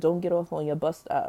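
usual speaking voice

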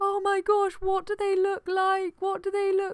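very high, weepy, tearful crying voice. Retelling coming round in front of a nurse, imitating her past self crying. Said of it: "I just started crying at him".

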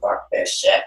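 frustrated, fed-up, worked-up whispered cursing. Retelling struggling with a verse in the studio: retelling own worked-up outburst. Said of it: "getting all, like, worked up".

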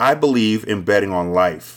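usual speaking voice

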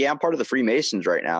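ordinary talk, nothing marked

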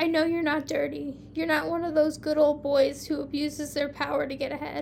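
ordinary delivery

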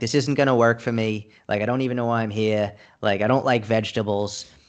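ordinary talk

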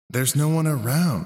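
sassy. Jack answers a worried robot, in a borderline sassy tone. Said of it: "he said in a borderline sassy tone".

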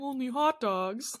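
put-on sad tone. Recapping a scene where Neil reminds JT he just ate, mimicking JT's sad regret. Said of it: "He says it so sadly, like with deep regret".

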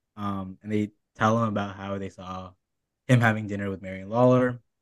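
normal talking voice

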